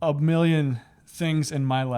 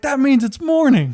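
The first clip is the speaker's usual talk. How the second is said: put-on excited child voice, higher and louder; 11 semitones higher, 8 dB louder than usual. Retelling what a young kid said on a plane: imitating an excited young kid. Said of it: "And he was just so excited".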